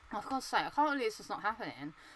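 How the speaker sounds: soft throat voice with nothing projected. Retelling own words while gaming alone: imitating own unprojected throat voice. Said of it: "I'm just using my throat voice rather than my projection voice".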